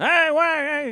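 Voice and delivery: very high early-tv pitchman announcer call. Asking the play-by-play host about doing live commercials, demonstrating an old-time TV commercial announcer voice. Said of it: "the voice where you talk like this".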